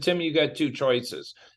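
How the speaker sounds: ordinary delivery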